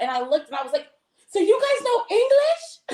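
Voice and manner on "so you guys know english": mock, stretched, very high-pitched, drawn-out disbelief, freaking out. Retelling confronting officers, imitating freaking out at them. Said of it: "freaking out on them".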